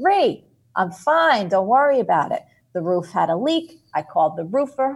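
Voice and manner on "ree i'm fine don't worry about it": loud, dismissive, brushing-off yell. Retelling how mom on the roof yelled down: imitating mom yelling down. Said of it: "And she yells down".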